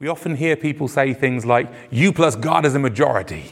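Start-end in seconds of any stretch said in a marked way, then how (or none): 1.9-3.5 bad, dodgy, put-on American accent. Quoting what people often say, in a dodgy American accent. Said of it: "I don't know why I did that in a dodgy American accent".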